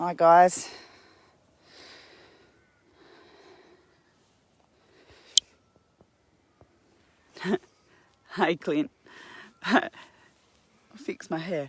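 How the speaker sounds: hoarse, croaky, breathy voice, nearly whispered. Greeting the viewers and Clint at the start, with a hoarse voice. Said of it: "sorry about my horsey voice".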